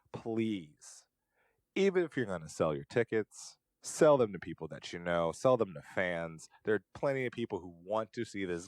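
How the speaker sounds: ordinary talk, nothing marked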